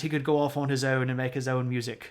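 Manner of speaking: bad, poorly done British accent. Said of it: "I don't know why I adopted a British accent there".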